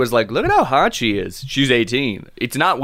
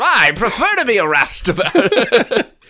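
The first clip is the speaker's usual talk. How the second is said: slow, old-fashioned put-on British accent; 10 semitones higher, 3 dB louder than usual. Trying out british accents in a playful exchange: put-on sideburns british accent. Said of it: "I'm going to go sideburns British".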